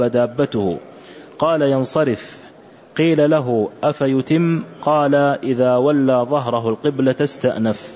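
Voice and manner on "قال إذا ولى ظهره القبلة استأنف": normal talking voice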